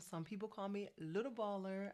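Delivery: ordinary talk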